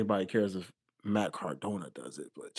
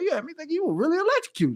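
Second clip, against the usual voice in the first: very high-pitched, fast, amazed disbelief. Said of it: "I was like".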